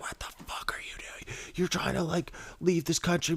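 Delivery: breathy, hushed, whispered furious outburst. Retelling a border crossing where a guard ran out at the car: imitating a screaming border guard. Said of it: "she starts screaming at me".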